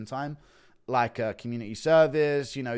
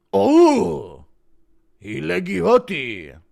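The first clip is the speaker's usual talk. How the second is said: very loud, slow fake Chinese accent, stretched oh; 7 semitones higher, 11 dB louder than usual. Listing joke impressions, doing Rogan talking about leg kicks: Rogan impression, mock Chinese accent. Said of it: "Impression of Chinese Rogan talking about leg kicks".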